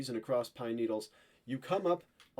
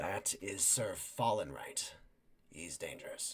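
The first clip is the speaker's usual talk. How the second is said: barely voiced, very quiet, hushed whisper; 6 semitones lower, 6 dB quieter than usual. Voicing a companion who warns a player into their ear: very quiet voice. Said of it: "would say very quietly in your ear".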